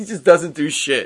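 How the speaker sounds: usual speaking voice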